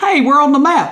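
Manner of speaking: put-on Pickens-accented speech. Repeating the line after a confused question: Pickens accent. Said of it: "such a good Pickens accent".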